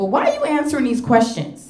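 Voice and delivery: irritated, high, swooping, annoyed demanding tone. Retelling a nurse questioning someone answering for a patient: imitating an annoyed nurse. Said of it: "the nurse starts getting annoyed".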